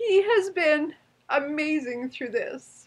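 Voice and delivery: high, tearful voice, talking through tears. Thanking their husband at the end of a speech, the speaker is crying while talking. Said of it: "I didn't think I'd cry".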